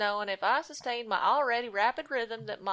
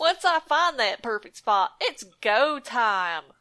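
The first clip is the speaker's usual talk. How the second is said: put-on cheery generic Southern accent, louder; 6 dB louder than usual. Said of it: "How about cheerful, nonspecific Southern accent?".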